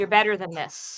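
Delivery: speaking in a whisper. A character whispers directly to the barbarian so only he hears, whispering. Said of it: "and he whispers".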